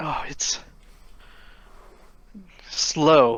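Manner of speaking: very exhausted, worn-out voice. In a roleplay scene, a character answers how the rune resetting goes, exhausted. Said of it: "Beth just kind of very exhaustedly goes".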